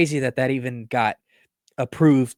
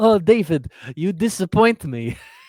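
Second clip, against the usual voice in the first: bad put-on Russian accent, pitched up; 5 semitones higher than usual. Asked to keep talking that way, mimicking a father-in-law in a terrible Russian accent. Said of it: "sound like father-in-law".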